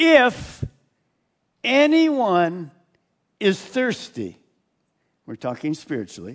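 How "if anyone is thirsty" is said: mock, loud, very slow, booming, carrying call. Retelling a call made to a crowd of thirsty people: imitating a loud voice. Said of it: "with this loud voice".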